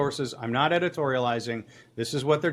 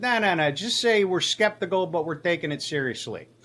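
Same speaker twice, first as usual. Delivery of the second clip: put-on Chicago-accented speech; 3 semitones higher than usual. Retelling a phone call with a police source: imitating Rocco. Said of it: "that was a really good voice that you did".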